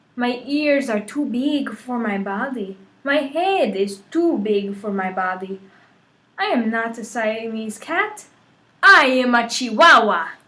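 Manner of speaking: slow, put-on Spanish accent. Narrator voicing Skippy-John Jones after seeing his mirror, very best Spanish accent. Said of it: "using his very best Spanish accent".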